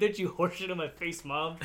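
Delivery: ordinary delivery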